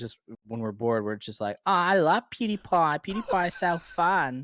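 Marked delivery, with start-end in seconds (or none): 1.7-4.4 put-on Australian accent, very high and slow. Showing how they impersonate a friend, an imitation of the friend with an australian accent. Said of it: "we do impressions of him all the time".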